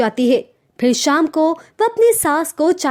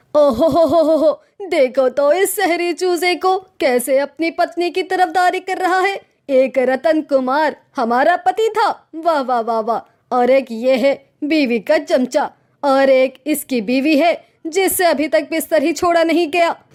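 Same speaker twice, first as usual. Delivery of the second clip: nagging, sarcastic, taunting, grumbling scolding voice. In a cartoon story, a mother-in-law answers her son siding with his wife, as a grumbling mother-in-law. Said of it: "तो फिर [name] की आवाज सुनकर उसका बेटा [name] दरवाजा खोलता है। / तो फिर [name] की आवाज सुनकर उसका बेटा [name] दरवाजा खोलता है। / लेकिन ये हमारी बहू रानी तो अब तक बिस्तर पर पड़ी सो रही है। / क्यों सुबह".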